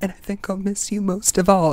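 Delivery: put-on hushed girl voice, put on. Acting out a farewell to friends in a line: hushed Dorothy impression. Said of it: "It's sort of hushed".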